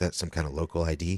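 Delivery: put-on flat emotionless voice. Retelling what a stranger in the immigration line asked: imitating an emotionless voice. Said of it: "he has, like, no emotion when he's talking".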